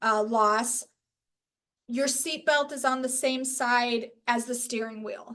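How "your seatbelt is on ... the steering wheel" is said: ordinary delivery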